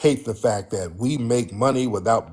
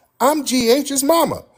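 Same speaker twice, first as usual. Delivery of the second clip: very high-pitched put-on voice. Retelling a woman's answer when he asked her name, in a very high-pitched voice. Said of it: "She said in a very high pitched voice".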